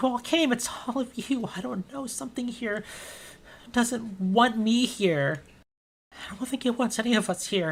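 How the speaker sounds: sobbing, crying in a high, tearful voice. Game master voicing a character who turns to the party, crying. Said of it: "she turns around and she's like crying".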